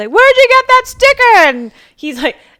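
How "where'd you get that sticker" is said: very loud, very high, shrill yell. Retelling how a man on the freeway yelled a question at him, retelling a yell. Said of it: "he's yelling at me".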